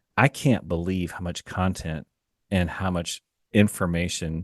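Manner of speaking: ordinary talk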